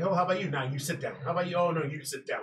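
play-acted smug, patronizing, condescending tone. Retelling how a guest spoke to people at a Q and A: imitating a condescending tone. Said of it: "he was just very condescending".

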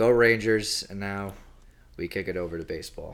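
glum, downbeat, dispirited, deflated delivery. Signing off the hockey talk and moving on to baseball: sounding depressed. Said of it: "Why did that sound so depressing?".

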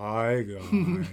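weary, worn-out, tired, gloomy, slow-sounding voice. Imitating a friend who sounds like Eeyore when tired: imitating Bert sounding tired like Eeyore. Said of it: "when he's tired, sounds like a Eeyore. He's like".

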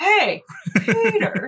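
very high voice, swooping around. Retelling how a friend kept saying a name: Joe from Family Guy voice. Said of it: "he would say it in that voice".

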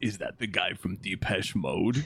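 very, very low, deep woman's voice. Quoting a woman from a TV episode, in a very low woman's voice. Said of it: "the woman with a very, very, very low voice says".

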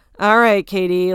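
put-on sarcastic reply. Retelling how a man at a reunion answered Katie: imitating a sarcastic reply.

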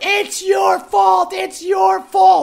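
put-on, very high, shrill, full shouting yell. Retelling what a woman on the sidewalk yelled: imitating a woman yelling. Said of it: "She starts yelling".

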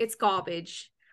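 put-on English accent. Playing a harsh talent-show judge handing out low scores, in an English accent. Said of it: "Is that your English accent?".

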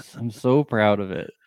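sarcastic, mock sincere and proud tone. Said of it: "understand sarcasm".

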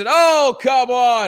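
very high, loud play-by-play sportscaster voice. Describing an easy voice job calling things, doing an old sportscaster voice. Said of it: "put on the old sportscaster voice".

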